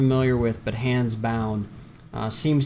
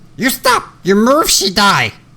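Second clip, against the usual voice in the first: very high, loud, shrill, swooping goblin shout; 9 semitones higher, 11 dB louder than usual. A figure pressing a sword into a player character's back shouts at them in a goblin voice. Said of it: "the goblin-esque voice from behind this figure shout out".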